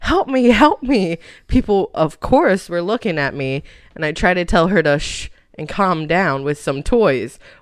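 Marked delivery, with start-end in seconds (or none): 0.0-1.2 mock screaming small child voice, pitched up. Retelling how a niece reacted to being picked up: imitating a child screaming. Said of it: "she starts screaming".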